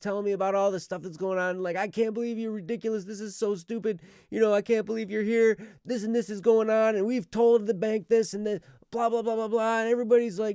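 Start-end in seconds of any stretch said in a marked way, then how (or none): 1.8-9.8 put-on angry yell, higher and louder. Retelling a lady who kept yelling about the bank: imitating a lady yelling. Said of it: "she's yelling at me".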